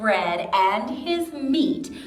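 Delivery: plain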